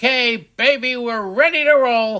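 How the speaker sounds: high, full-on shouting. Signing off the show to listeners: yelling. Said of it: "Stop yelling, [name]".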